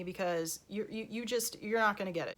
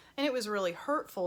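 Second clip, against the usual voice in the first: normal talking voice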